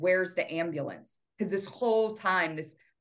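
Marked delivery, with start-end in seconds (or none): none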